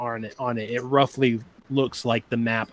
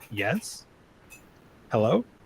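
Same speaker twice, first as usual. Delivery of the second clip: puzzled, unsure, confused tone with swooping pitch. A voice answers after a knock at the door, in a confused voice. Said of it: "you hear a very kind of confused voice say".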